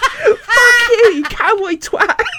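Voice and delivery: shrill, loud, furious screaming outburst. Recounting the moment they started screaming at a man, retelling a scream. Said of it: "I just started screaming at him".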